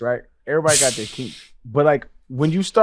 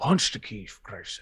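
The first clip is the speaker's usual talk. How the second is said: breathy, hushed, half-whispered movie-star voice; 6 semitones lower, 10 dB quieter than usual. Quoting a line from Finding Forrester: Sean Connery voice. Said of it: "That was a really good Sean Connery".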